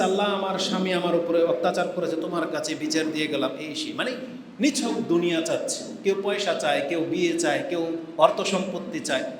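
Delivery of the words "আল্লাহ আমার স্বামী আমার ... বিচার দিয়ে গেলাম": plain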